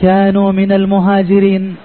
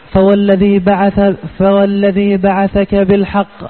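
normal talking voice

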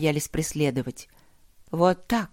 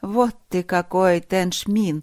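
weary smirking tone, slower; 2 semitones higher than usual. Reading a story, a sorceress answers the man who would conquer her city; weary smirk. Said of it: "усмехнулась она устало".

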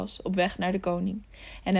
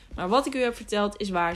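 plain reading voice

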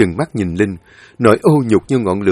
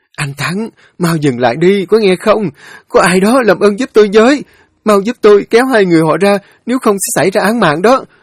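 very high, desperate, begging shout; 10 semitones higher, 5 dB louder than usual. As two men fight, Linh cries out to Thắng: screaming, begging. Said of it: "chỉ biết hét lớn cầu xin Thắng".

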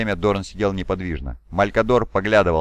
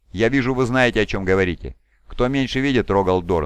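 ordinary delivery

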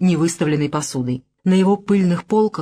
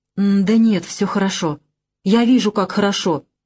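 usual speaking voice

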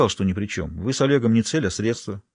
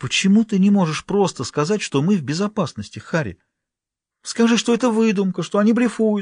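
very high, begging, pleading voice; 10 semitones higher than usual. A woman on the phone begs Harry for reassurance, pleading. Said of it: "сказала она умоляюще".

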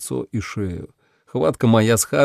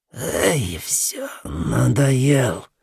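words forced out through tightly clenched gritted teeth. Narrator reads an old woman addressing the narrator, muttered through teeth. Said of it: "Процедила сквозь зубы старуха".

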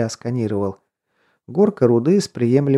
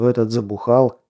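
ordinary delivery

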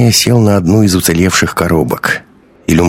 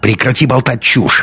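high-pitched, barking the words out; 6 semitones higher than usual. Answering a man who says he's kept alive only for what he knows, barked. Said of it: "рявкнул Андрей".

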